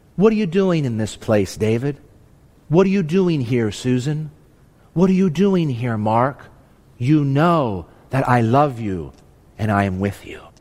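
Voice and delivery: tender, kindly, gentle and loving, low voice. Preacher voices God asking his listeners the question, gentle and loving. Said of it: "in his gentle, loving voice".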